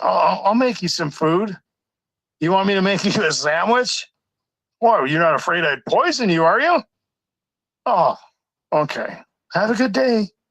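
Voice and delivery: mimicked mildly sarcastic tone. Acting out what others say to a target, imitating slightly sarcastic remarks. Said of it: "just a tiny little bit of sarcasm in there".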